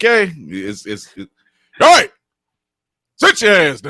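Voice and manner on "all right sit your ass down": high, loud, yelling voice. Asked to show the audience how it sounds when your kids mess up: yelling at kids. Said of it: "Could you just go ahead and yell at your children right now?".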